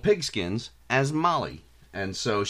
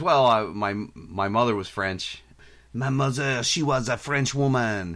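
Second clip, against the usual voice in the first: put-on fake French accent; 2 semitones higher than usual. Retelling Mo talking to a cop who busted in, in Mo's fake French accent. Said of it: "Mo pulls on his fake French accent".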